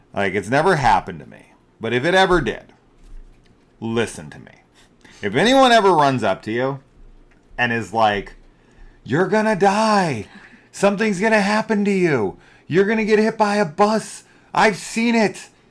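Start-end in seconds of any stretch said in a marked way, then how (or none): 9.0-15.4 very high, shrill, frantic play-acted yelling. Warning listeners about strangers who run up to them, imitating someone yelling a warning. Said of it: "If they start yelling this shit at you".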